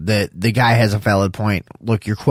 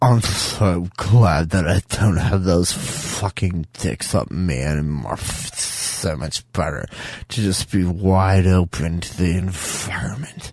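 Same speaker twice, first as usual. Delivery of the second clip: mocking, put-on fart-like voice; 3 semitones lower, 3 dB quieter than usual. Mocking the voice of a YouTuber just heard: mocking fart voice. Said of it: "could then talk in a fart voice".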